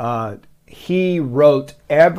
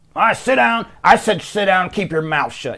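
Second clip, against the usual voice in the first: stern, belligerent, no-nonsense delivery; 4 semitones higher than usual. Speaker imagining how a belligerent tough guy talks, mock-stern Joe impression. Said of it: "he's one of those stern".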